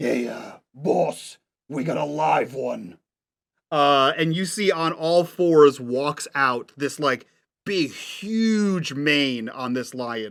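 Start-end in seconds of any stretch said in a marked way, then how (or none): 0.0-3.0 low, creaky, rough-voiced macaw call. Voicing a macaw on a golf cart calling to its boss: macaw calling back.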